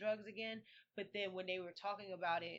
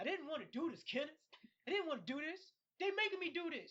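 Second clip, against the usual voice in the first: high, pitched-up, simple-minded voice; 9 semitones higher than usual. Recounting a movie scene with a corrupt cop, Lenny-like voice. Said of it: "That's how he sound".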